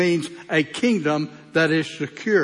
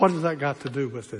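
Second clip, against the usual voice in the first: put-on sarcastic put-down tone; 3 semitones lower, 5 dB quieter than usual. Retelling own reply to people making excuses: retelling a sarcastic reply. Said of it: "I wouldn't call myself sarcastic, but I kinda do like this".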